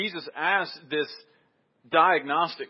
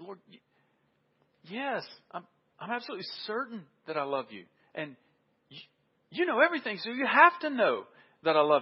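mock, almost desperate insistence with swooping pitch; 3 semitones higher than usual. Retelling a Bible passage, voicing his reply to the Lord, acting out desperation. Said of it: "You can almost hear desperation in his voice".

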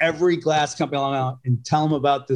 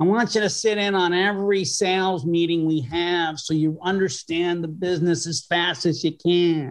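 complaining, whining voice; 4 semitones higher than usual. Recalling the first day there, quoting Oscar Drucker in a whiny voice. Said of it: "Oscar had this whiny voice".

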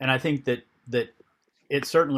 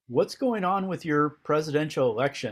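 non-native, broken English phrasing; 3 semitones higher than usual. Retelling a guide's question during a trek, imitating broken English. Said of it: "in his broken English and says".

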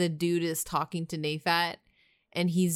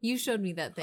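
normal talking voice

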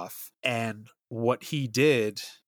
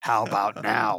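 mock menacing, creepy, really sinister voice. Retelling a legend, voicing the masked woman's question in a mock-sinister voice. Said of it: "she'll ask in this like really sinister voice".

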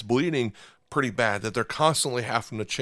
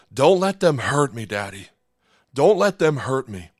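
put-on mimicked child yelling, louder; 2 semitones higher, 6 dB louder than usual. A father recalls his daughter while he held her down for stitches, retelling her yelling. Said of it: "my daughter is yelling".

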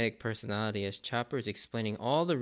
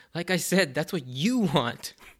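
fed-up, exasperated, raised and pitched-up voice; 6 semitones higher, 6 dB louder than usual. Retelling a scene, speaker voices Zoro's reply to Luffy, imitating Zoro's exasperation. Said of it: "Zoro's exasperated voice comes out".

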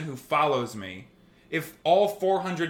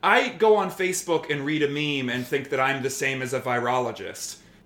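ordinary talk

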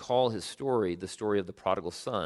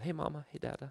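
put-on tiny, soft, high toddler voice; 6 semitones higher, 9 dB quieter than usual. Parent recalling a favorite home video of Sam as a toddler, little two-year-old voice. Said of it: "in his little two-year-old voice".

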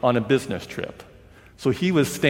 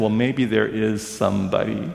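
muttering under breath, mumbled. Retelling a reply to a question about whom to call: imitating muttering under breath. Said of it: "under his breath".

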